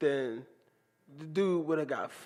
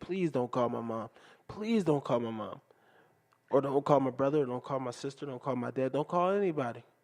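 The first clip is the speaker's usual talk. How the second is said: mock tearful, crying pleading voice; 2 semitones lower than usual. Retelling begging a teacher not to call home: imitating own past tearful pleading. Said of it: "I remember crying, begging, and pleading to the teacher".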